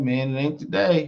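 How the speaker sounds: ordinary talk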